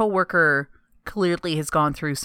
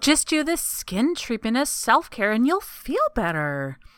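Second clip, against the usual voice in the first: mocking, sing-song, salesy advertisement voice; 7 semitones higher than usual. Complaining that self-care stuff just sells products, mock self-care ad voice. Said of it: "I don't know why I use that specific voice for it".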